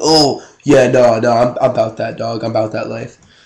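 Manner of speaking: put-on posturing, try-hard wannabe kid voice. Mocking someone who heard a few songs, imitating a poser kid. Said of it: "you heard N W A, like, five times, and".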